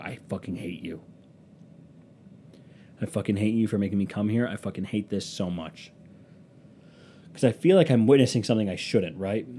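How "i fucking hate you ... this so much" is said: half-whispered under the breath, hushed stage whisper. Recalling half-whispering to a companion while a scene unfolds: retelling a half-whisper. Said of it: "I'm whispering to Dana as this is happening".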